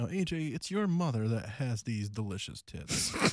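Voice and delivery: soft, gentle, soft-spoken voice. Hosting a mock radio segment and questioning a guest, soft voice. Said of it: "You got to be soft".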